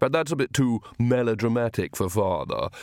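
ordinary delivery, nothing marked

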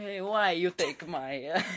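very loud, booming, high Italian accent. Asked for one final accent before finishing, the speaker tries an Italian accent. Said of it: "go Italian accent".

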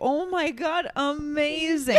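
drawn-out, very slow words with mocking sound. Retelling how Juan reacted to the trip plan: imitating Juan's mocking-sounding amazing. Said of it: "I thought he was mocking me".

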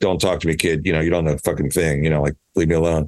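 ordinary talk

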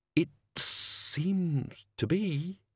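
gritted-teeth delivery, words forced through clenched teeth. Narrator reading a character's line, through clenched teeth. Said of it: "The words escaped through his teeth".

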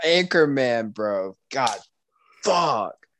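worked up, heated tone. Reacting to the other speaker picking Anchorman first: heated. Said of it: "that one had you heated".

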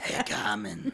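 put-on chain smoker voice. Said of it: "It sound like a chain smoker".

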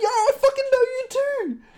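very high, bubbly dude voice. Retelling meeting a guy who turned out just like him, imitating a bubbly dude. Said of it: "this awesome bubbly dude's like".

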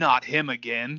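deep, dark masculine tone. Recounting a ghost hunt, voicing what the presence said: dark, deep man's voice. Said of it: "Dark, like deep man's voice".

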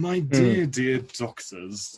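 grand upper-class deep tone. An actor demonstrates the voice used for a role, very posh and deeper. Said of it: "I went very posh, but a lot deeper".

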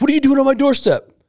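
shrill yelling, pitched very high. Acting out a customer at the doorstep: imitating a yelling customer. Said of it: "a customer comes at me yelling".

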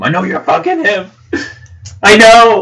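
tearful, accusing, very high, loud crying wail. Acting out how not to come into the room: mock crying accusation. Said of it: "Like, crying".

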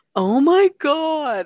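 very high, shrill, very loud yelling outburst. Recounting how a man shouted after every punchline in a small comedy club, retelling a yell. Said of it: "he like yelled".

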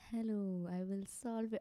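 sleep-inducing, lulling ASMR-style voice. Podcast host showing how they sound, in a sleep-inducing ASMR voice. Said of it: "I sound like some sleep inducing like you know those ASMR sleep inducing people".

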